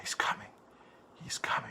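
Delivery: soft, hushed, suspenseful whisper.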